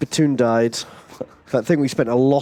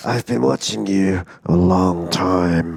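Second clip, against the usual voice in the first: sinister put-on villain voice, lower pitch; 6 semitones lower than usual. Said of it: "it's really sinister when Doctor Von Strangle says".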